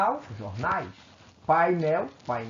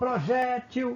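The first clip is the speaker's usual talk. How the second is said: projétil with weight on middle syllable jé; 7 semitones higher than usual. Calling out a word to find its strongest syllable, stress on jé of projétil. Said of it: "A sílaba mais forte é a G".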